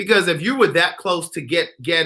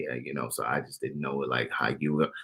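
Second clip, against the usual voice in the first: very low, soft, hushed gravelly vocal fry; 14 semitones lower, 12 dB quieter than usual. Imitating the way a man the speaker criticizes talks, in his vocal fry. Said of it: "like this vocal fry?".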